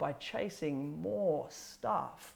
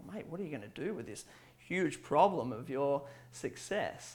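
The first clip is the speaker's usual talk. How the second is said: half-sarcastic, teasing tone; 5 semitones lower than usual. Retelling own almost sarcastic reply to a friend: retelling an almost sarcastic remark. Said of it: "Almost sarca-, sarcastically, I said to him".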